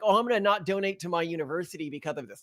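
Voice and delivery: normal talking voice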